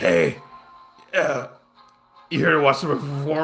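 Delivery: rough, rasping, raspy voice. Retelling what a stranger asked before a performance, imitating a raspy voice. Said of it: "he has this raspy voice".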